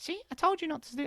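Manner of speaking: very high, squeaky, helium-like cartoon voice. Speaker shows how to make the critical inner voice silly: Mickey Mouse voice. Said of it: "that Mickey Mouse voice or that helium balloon voice".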